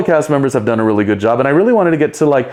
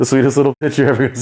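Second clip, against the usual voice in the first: fast rattled-off delivery like a show tagline. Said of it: "Isn't that her tagline?".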